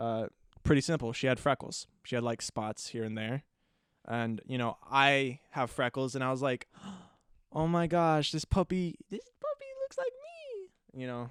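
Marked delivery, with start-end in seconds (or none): 7.5-11.0 put-on very high, sing-song little kid voice, "me" drawn out. Recalling naming a freckled puppy, the speaker quotes their childhood self in a little kid voice. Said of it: "little kid voice".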